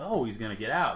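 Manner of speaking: plain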